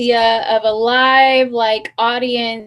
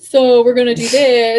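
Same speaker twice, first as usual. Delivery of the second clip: mocking put-on man voice; 4 dB louder than usual. A woman quotes a man, doing the voice women use for men: mocking man voice. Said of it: "That's the man voice".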